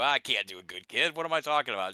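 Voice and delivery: ordinary talk, nothing marked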